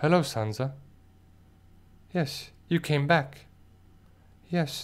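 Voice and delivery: mock dead-level voice with zero emotion. Imitating Bran greeting Sansa: emotionless Bran voice. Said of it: "no emotion whatsoever".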